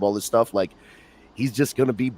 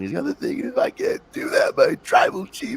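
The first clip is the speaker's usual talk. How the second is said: weepy, crying, torn-up, conflicted voice. Describing Paul Heyman torn over Roman Reigns on Friday night, imitating Paul Heyman crying. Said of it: "and he's like crying".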